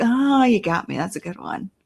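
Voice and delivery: put-on amused tone. Imagining the woman's reaction had she been alive, imitating her amused reply. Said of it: "She'd probably be like".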